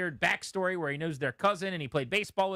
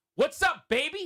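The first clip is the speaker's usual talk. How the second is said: very high, playful, teasing tone; 10 semitones higher, 4 dB louder than usual. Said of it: "and I go like this".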